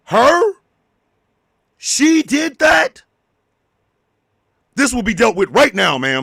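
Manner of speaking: reassuring boss voice on the phone. Acting out a call at work with a prop phone: acting a boss answering a phone call. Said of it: "here you are at work, when all of a sudden".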